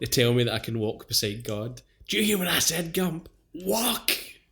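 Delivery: put-on loud, rising, bitter, furious raging rant. Retelling a film scene, quoting Lieutenant Dan: imitating Lieutenant Dan raging. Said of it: "He's raging about not being able to walk".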